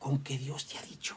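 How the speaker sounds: very quiet, gentle, soft, subtle whisper. Retelling the Bible story, the speaker acts out the serpent's words to the woman: soft, subtle voice. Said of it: "viene con una voz suave".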